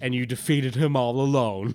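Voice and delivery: loud, patronizing, condescending teacher voice. Reading a comic character's line aloud: put-on condescending third-grade teacher voice. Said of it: "a condescending third grade teacher and says".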